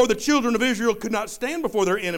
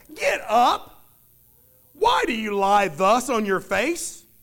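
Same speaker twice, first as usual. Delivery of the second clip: acted-out sarcastic tone. Reading the Lord's reply to Joshua from verse 10, retelling it sarcastically. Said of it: "Can you hear the sarcasm in his voice?".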